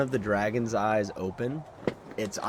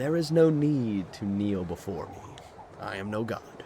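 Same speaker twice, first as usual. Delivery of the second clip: feminine, draconic dragon voice. The narrator voices the great dragon answering someone kneeling before her, draconic yet feminine voice. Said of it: "a draconic yet feminine voice".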